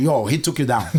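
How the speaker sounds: ordinary talk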